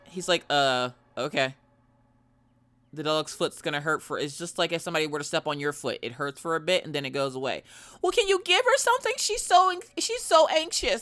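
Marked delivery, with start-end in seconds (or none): 8.0-11.0 very high, frantic, flipping-out woman's voice. Retelling a lady pleading with the vet about her dog, imitating a frantic woman. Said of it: "this lady was flipping out about this dog".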